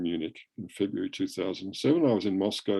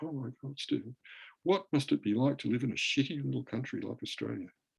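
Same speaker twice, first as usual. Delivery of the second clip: mock sorrowful, very sad tone of voice; 4 semitones higher, 7 dB quieter than usual. Quoting a great friend's serious remark to the speaker, retelling a really sad tone. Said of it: "in this really sad tone".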